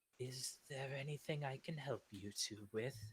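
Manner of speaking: gentle, soft, wise and delicate sage-like voice. Game master voices someone speaking up behind two players, wise, delicate voice. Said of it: "a wise and delicate voice speak up".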